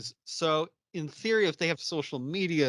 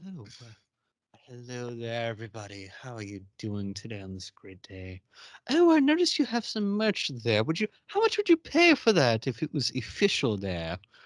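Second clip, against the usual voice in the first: fake British accent, lower pitch; 6 semitones lower than usual. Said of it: "doing a British accent for everybody".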